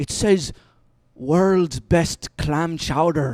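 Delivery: put-on slow, drawn-out drunk Scottish accent. Retelling what a drunk man read from a sign: imitating a drunk scottish man. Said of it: "the two drunkest Scottish guys, and one of 'em points to the sign and he goes like".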